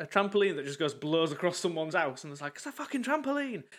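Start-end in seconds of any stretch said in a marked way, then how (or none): 2.6-3.6 put-on very high-pitched, exclaimed Scottish accent. Quoting someone in a video about a blown trampoline: scottish accent. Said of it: "but in a Scottish accent".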